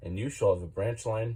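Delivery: plain reading voice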